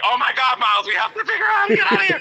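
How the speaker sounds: put-on very high all-out yell, climbing in pitch. Acting out a made-up house fire scene: mock yelling.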